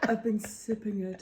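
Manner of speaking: confessional, owning-up tone. Imitating Ross making a confession to the others: imitating Ross confessing. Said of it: "Is that my impression of me?".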